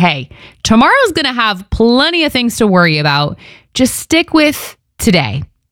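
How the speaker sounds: put-on sarcastic, offhand, high and swooping voice. Imagining how Jesus said a verse about tomorrow's worries, imitating Jesus, sarcastic. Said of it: "I hear Jesus saying it kind of sarcastically".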